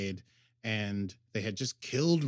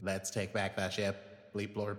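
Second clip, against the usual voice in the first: robotic droid voice, lower and quieter; 3 semitones lower, 6 dB quieter than usual. Podcast host shows how they wanted a show's character to sound, in a robotic droid voice. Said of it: "I did a pretty good droid voice".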